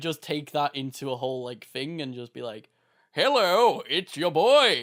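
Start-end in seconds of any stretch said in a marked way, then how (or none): 3.1-4.8 loud, belted cartoon voice swooping up and down. Taking his cartoon voice into a greeting bit: Plankton voice.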